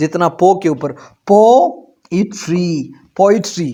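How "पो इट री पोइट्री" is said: poetry with stress on first syllable po. Hindi lesson on English word stress: stress on po in poetry. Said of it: "पहला वाला syllable जो है इसके ऊपर stress डाला जाता है".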